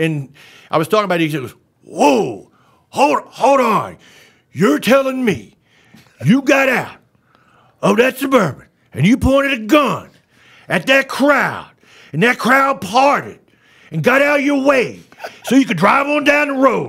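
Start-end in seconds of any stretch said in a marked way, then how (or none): 1.8-16.9 very high, wildly swooping pitch, hard pitch swings. Retelling a listener's stunned reaction in an Al Pacino impression. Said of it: "well done on Pacino".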